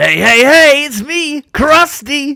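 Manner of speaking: belted out high and loud. Asked for their best impression, introducing themselves; Krusty the Clown impression. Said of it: "your best impression of Krusty the Clown".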